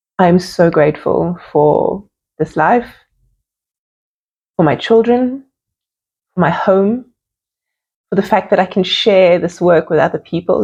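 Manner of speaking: teary, heartfelt voice on the edge of tears. Showing an audience what being grateful looks like, tearing up. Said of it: "Look how I'm tearing up".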